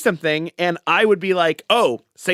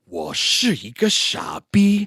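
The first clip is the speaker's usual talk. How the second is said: very dramatic, declaimed movie-line delivery; 3 semitones higher than usual. Retelling what someone said, the speaker delivers it mock-dramatic, like a movie line. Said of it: "it's very very dramatic. dramatically like he's like in in a movie".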